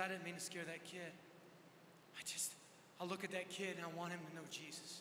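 low, soft, quiet, earnest voice.

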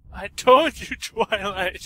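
tearful, crying, high, loud shout. Narrating a character crying out after someone vanishes, shouting through tears. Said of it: "Spike shouted, tears in his eyes".

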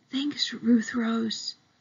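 hushed stage whisper. Narrator reads a boy thanking a girl while keeping watch for a burglar: whispered. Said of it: "Josh whispered".

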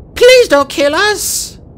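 very high, loud, squeaky, frightened voice. Pleading with the lava dragon not to kill them, squeaking. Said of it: "Fatespeaker squeaked".

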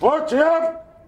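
very high voice brought way up, loud, projected. Demonstrating greeting someone across the way, voice brought way up without hollering. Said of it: "I'll bring my voice way up without hollering".

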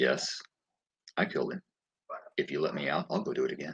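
hushed, very quiet, slow, emotionless flat monotone. Imitating an executed man's statement from his last interview: imitating a flat emotionless voice. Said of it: "no feeling, no empathy, no, no emotion".

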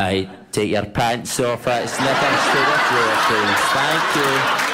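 loud, slow, booming train station announcer voice.

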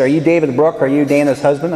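plain

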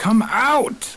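high, loud, frustrated yell. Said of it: "You're yelling at a cigarette machine".

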